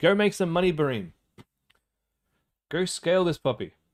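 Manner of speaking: thrilled, eager, excited, swooping cheering voice. Reviewing a viewer's ad results and cheering them on: excited voice. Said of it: "You can hear it in my voice".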